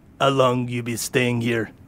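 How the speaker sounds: put-on Russian-accented dwarf dock worker voice. Game master voices a dock worker questioning the party, Russian-accented dwarf voice. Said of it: "can I please use Russian accent dwarves?".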